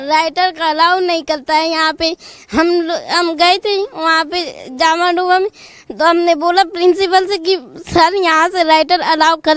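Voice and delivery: tearful crying while speaking.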